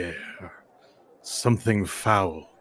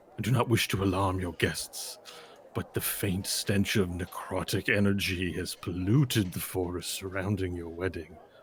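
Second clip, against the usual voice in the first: lowered, very quiet, hushed voice; 9 dB quieter than usual. A character warns Captain Autumn Dew about the wedding, in a lowered voice. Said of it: "and I lower my voice".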